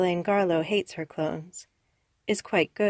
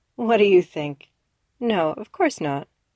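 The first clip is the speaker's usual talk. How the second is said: sour, mirthless, bitter, raised; 6 dB louder than usual. Asked whether it worked, the speaker answers after a laugh, bitter. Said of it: "laughs bitterly".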